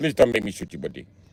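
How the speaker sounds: put-on Indian English accent, steady delivery. In a robbery bit, the man being robbed answers the robber in an Indian accent. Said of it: "how you take an Indian guy serious".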